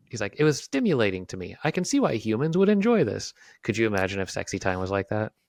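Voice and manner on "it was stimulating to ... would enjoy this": high, put-on AI robot voice. Retelling a vr video, quoting the ai companion: imitating an ai person. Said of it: "this A I person in V R".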